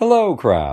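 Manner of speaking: very sweet, extra friendly, friendliness laid on thick. Narrator reads the monkey greeting the crab in his most friendly voice. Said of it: "the monkey said in his most friendly voice".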